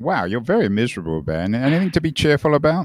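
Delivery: light, playful, sing-song teasing. Speaker answering another's gloomy remarks, teasing. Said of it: "I'm teasing".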